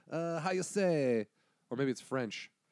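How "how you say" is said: put-on Italian accent. Explaining to the others which accent they were doing, in an italian accent. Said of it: "I was doing like an Italian".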